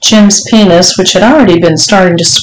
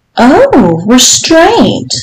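all-innocence, high, lilting sing-song tone; 6 semitones higher than usual. A narrator reads Mrs. Johnson replying to Jim, innocently. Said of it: "Mrs. Johnson said innocently".

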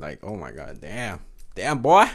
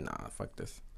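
low, hushed, dismissive whisper. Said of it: "I was like".

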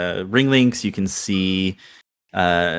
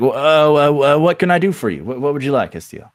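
stammering, stuttering, much higher in pitch; 7 semitones higher, 6 dB louder than usual. Voicing a character in the scene, stammering. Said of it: "He's like stammering".

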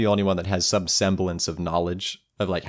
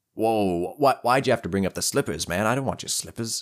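improvised goblin character voice; 2 semitones higher than usual. Improvising a goblin character on the spot; made-up goblin voice. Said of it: "we're not going to do this voice. This is not what a goblin sounds like".

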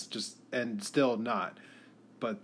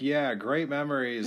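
plain

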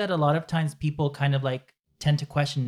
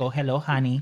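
put-on bad Mexican accent. Speaker showing how people expect Latin people to talk, in a bad Mexican accent. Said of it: "Like Mexican, yes, with a bad accent".

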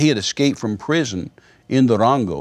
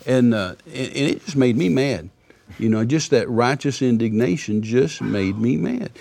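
ordinary talk, nothing marked

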